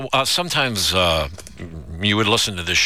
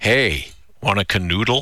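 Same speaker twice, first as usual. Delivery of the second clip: ordinary delivery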